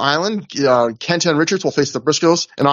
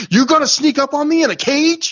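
very high-pitched, frightening scream; 12 semitones higher than usual. Recapping a wrestling promo, the speaker retells Joe's scary scream. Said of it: "Joe screams in a voice that like legitimately scared me".

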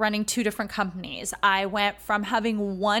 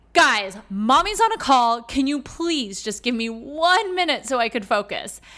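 mock shouted, exasperated, at-wit's-end screaming; 2 semitones higher, 4 dB louder than usual. Mother on a Zoom call retelling what she screamed at her three kids, retelling a scream. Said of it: "And I screamed".

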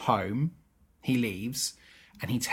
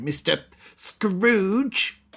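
acted-out angry, indignant, high raised voice; 9 semitones higher, 5 dB louder than usual. Retelling a film scene where Honeydew confronts Scrooge: imitating Honeydew angry. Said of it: "Honeydew gets all, like, angry at Scrooge".

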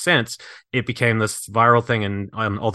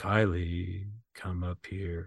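eerie, creepy, low, barely audible, very slow hushed drawl; 4 semitones lower, 12 dB quieter than usual. Retelling a scene where a voice calls a kid upstairs, in a creepy voice. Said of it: "Like this creepy voice".

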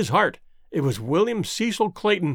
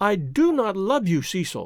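usual speaking voice

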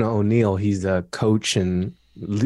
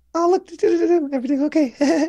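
awkward voice jumping up very high. Imitating own past words when holding back: imitating own voice going up awkwardly. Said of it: "My voice goes up a little awkward".

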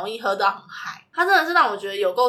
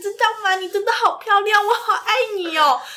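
put-on very high, loud drunk yelling; 11 semitones higher, 3 dB louder than usual. Retelling a drunk friend shouting on a street in japan, retelling a shout. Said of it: "大马路上大喊大喊".

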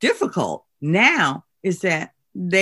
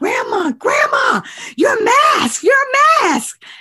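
acted, very high, loud little child's scream; 5 dB louder than usual. Retelling how a two-year-old granddaughter screamed about a forgotten mask: imitating a child screaming. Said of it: "she was screaming".

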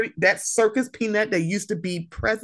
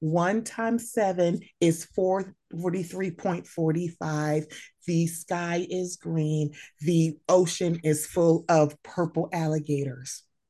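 slow, pleasant cadence, rolled out; 5 semitones lower, 6 dB quieter than usual. Mocking a commentator by imitating Candace Owens's cadence. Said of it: "Candace Owens talks like this".

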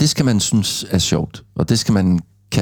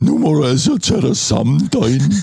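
high-pitched, swooping funny voice; 7 semitones higher than usual. Showing how a harsh remark sounds softer in a funny voice, in Scooby voice. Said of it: "så kan jeg sige det som Scooby".

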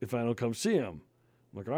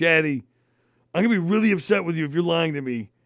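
higher, louder, put-on angry little girl voice; 3 semitones higher, 7 dB louder than usual. A father retells his daughter in the back seat turning on him, imitating an angry child. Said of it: "she's starting to get pissed".

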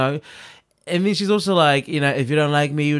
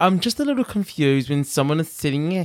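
mocking, put-on woman's voice. Retelling what a woman said: mocking imitation of her voice. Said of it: "people making fun of her voice".

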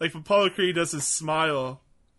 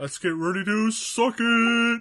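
pitched-up, drawn-out mock boxing ring announcer voice; 6 semitones higher, 4 dB louder than usual. Recalling a wrestling parody of the announcer: D X aping Michael Buffer. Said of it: "I loved it when D X aped him".

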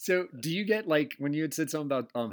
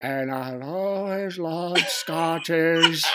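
mock-drunk, slowed down, much higher and louder; 4 semitones higher, 7 dB louder than usual. Speaker retelling what he said earlier, acting drunk, slowed down. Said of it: "slow your voice down there to sound like you're completely smashed".

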